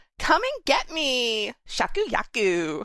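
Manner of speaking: put-on Valley girl accent. Voicing a movie character's line over a scene: Valley girl voice. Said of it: "they're all Valley girls in this".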